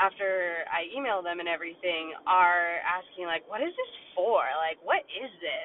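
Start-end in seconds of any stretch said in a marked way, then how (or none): 3.5-5.7 negative, half-laughing, swooping scoff. Describing award recipients replying to her email, mimicking their scoffing tone. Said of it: "with like a negative tone and or almost laughing and goffing at it and they're scoffing".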